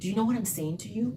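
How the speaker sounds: hushed, very quiet. Drawing people in by being quiet about it: very quiet. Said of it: "sometimes you'll draw them in by being very quiet about it".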